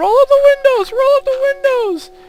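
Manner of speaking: frantic screaming, very high-pitched and very loud. Retelling mom in the driver's seat as monkeys rushed the car: imitating mom screaming. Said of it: "in the driver's seat screaming".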